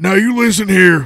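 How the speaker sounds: put-on Southern wrestler voice. Doing a Southern accent that sounds like Stone Cold Steve Austin. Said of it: "I almost sound like Stone Cold Steve Austin".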